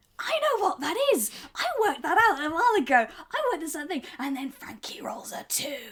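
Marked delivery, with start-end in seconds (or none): 0.2-4.0 annoyed, cross, know-it-all tone, pitched up. Retelling own reaction while a scene was described: imitating own cross exclamation. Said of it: "Very cross about that".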